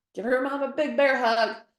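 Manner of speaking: loud high-pitched shout. Describing the end of a photo session, retelling a yell. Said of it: "And so I always yell".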